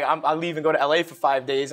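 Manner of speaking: ordinary delivery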